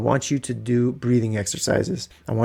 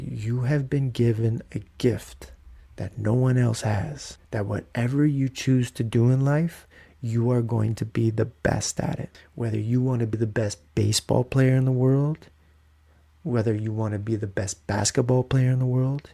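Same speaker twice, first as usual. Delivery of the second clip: put-on calm, low, hypnotic voice. Retelling what is said to a son every night while rocking him: imitating his own low hypnotizing voice. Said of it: "very hypnotizing way, like, low".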